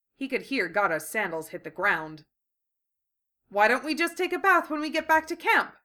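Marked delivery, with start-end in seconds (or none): 3.5-5.7 desperate, pitched-up voice. Speaking to Gata after the bugs are dead, desperate asking. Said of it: "I desperately asked".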